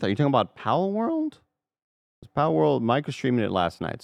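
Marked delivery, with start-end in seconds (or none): 0.0-1.3 voice breaking, pitch jumping higher. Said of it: "Did your voice crack when you said".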